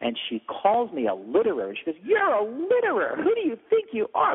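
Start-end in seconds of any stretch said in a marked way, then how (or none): 2.0-4.4 put-on very high, shrill, furious shrieking and screaming. Retelling how a woman called the speaker a litterer, retelling a woman screaming. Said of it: "she just starts screaming at me".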